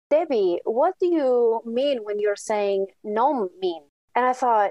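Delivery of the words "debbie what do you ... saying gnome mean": put-on Spanish-accented English. Retelling a student's question in class: imitating a spanish accent. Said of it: "in his beautiful Spanish accent".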